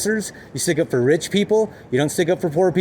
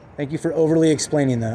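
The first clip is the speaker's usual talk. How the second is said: normal talking voice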